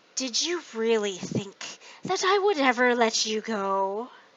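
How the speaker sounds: deep, warped, distorted voice. A man speaks to his own reflection in the mirror: deep, distorted voice. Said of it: "spoke to his reflection in a deep, distorted voice".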